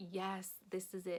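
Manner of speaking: ordinary talk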